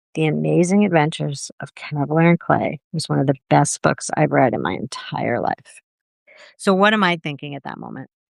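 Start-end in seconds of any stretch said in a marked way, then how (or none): 0.2-5.8 put-on whisper, lower in pitch. Retelling how a guest leaned over and spoke: imitating someone whispering. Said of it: "she whispers in my ear".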